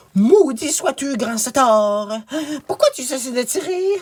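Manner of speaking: very high, wicked, villainous count voice. Narrator reading a tale, the count falls in the mud and calls to Tristan: infamous Count Cariado's voice. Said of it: "se présenta un dernier contingent de seigneurs à la tête duquel se trouvait l'infâme comte Cariado. / se présenta un dernier contingent de seigneurs à la tête duquel se trouvait l'infâme comte Cariado".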